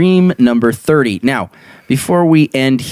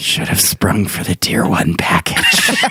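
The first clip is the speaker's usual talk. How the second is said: hushed whisper; 4 semitones lower, 4 dB quieter than usual. Narrator leaning over to his wife in bed, whispering into her ear. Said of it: "whispered into her ear".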